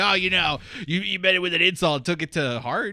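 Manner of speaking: ribbing, mocking tone. Retelling what Nick said about the insult: imitating Nick. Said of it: "here's Nick going over going like".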